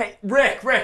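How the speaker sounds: put-on high yell. Retelling an interview stopped by a leaf blower: imitating Marc Maron yelling. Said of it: "yelling and yelling".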